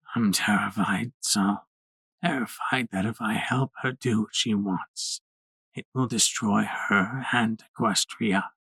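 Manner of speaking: low, raspy, hoarse voice. Reading aloud a coughing, ailing character's answer: low raspy voice. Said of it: "he said in his low, raspy voice".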